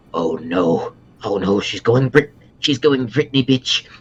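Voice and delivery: under-the-breath muttering. A player's character leans over to a companion and speaks: muttered under breath. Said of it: "under his breath".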